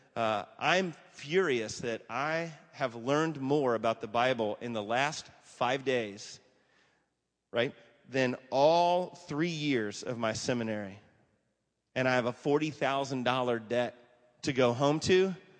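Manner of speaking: ordinary delivery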